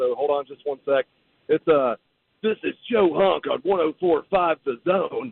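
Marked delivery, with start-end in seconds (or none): 2.4-5.3 heavy, lifelong chain-smoker's voice. Asked to do his voice again, you prepare yourself, then do the Joe Hunk voice, like a thirty-five-year smoker. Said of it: "like I've been smoking cigarettes every day of my life for thirty-five years".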